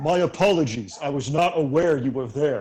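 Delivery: loud, ponderous, lumbering voice of a huge giant. Narrating to a player, voicing a giant calling from over the hills: lumbering giant voice. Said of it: "you hear a lumbering voice round out from over the hills".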